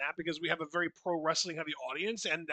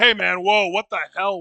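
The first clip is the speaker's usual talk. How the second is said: put-on startled voice, louder; 2 semitones higher, 10 dB louder than usual. Acting out a startled reaction to a whisper: imitating Dwayne Johnson upset. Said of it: "and he's just like".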